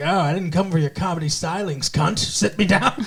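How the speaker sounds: put-on cranky, griping, grumpy old man voice. Retelling a scene where a customer asks for his table: imitating a grumpy old man. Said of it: "this old grumpy man comes in".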